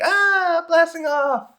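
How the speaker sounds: very high, cried-out call. Retelling a cartoon scene where three guys go flying: Team Rocket blasting-off cry. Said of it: "like a Team Rocket type thing".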